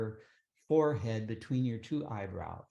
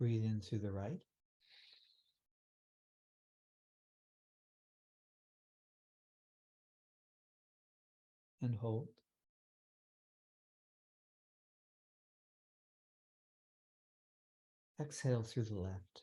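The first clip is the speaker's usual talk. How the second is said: calm voice dropped lower in tone; 6 dB quieter than usual. Guiding listeners through alternate-nostril breathing, in a lowered calm voice. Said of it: "My voice has lowered in tone".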